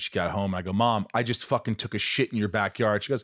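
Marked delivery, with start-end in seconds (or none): none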